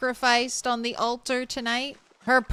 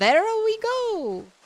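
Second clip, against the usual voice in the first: bad, very high-pitched put-on voice; 10 semitones higher than usual. Playing a game and saying a short line: awful Mario impersonation. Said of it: "my best Mario impersonation, and it was awful".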